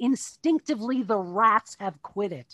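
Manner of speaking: ordinary talk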